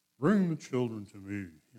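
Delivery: put-on epic old-movie intoning, like a screen prophet. Showing how old Jesus movies sound, intoning like movie Jesus. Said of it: "he intoned his speech in a certain way? Like in the movies".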